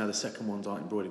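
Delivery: ordinary talk, nothing marked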